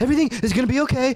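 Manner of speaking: rushed, very high, frightened voice. Retelling a girl coming up mid-show at the club, imitating a terrified voice. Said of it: "in the most terrified voice ever".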